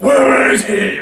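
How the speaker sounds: loud, gravelly growl.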